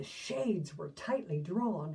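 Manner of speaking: ordinary delivery, nothing marked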